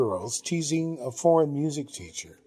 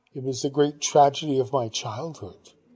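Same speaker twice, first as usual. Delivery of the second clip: plain reading voice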